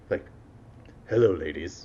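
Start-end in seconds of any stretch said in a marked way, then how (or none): 1.1-1.9 polished, smooth, suave put-on announcer delivery. Showing how they imagined their voice sounded on practice tapes: imagined smooth voiceover voice. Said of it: "what I thought I sounded like".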